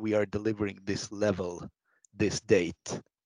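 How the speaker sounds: ordinary talk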